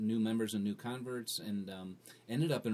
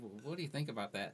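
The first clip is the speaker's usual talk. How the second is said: soft, quick, sheepish and concerned voice. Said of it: "And real sheepish".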